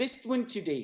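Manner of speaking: put-on New Zealand accent. Show hosts take turns trying accents; one says it in a new zealand accent. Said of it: "Let's try a New Zealand accent".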